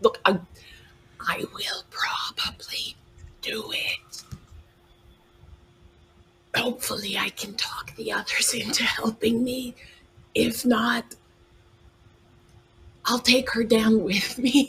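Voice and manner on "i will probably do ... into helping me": soft, voiceless whisper. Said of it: "You don't have to whisper".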